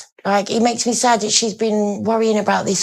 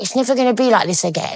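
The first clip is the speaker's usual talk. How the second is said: normal talking voice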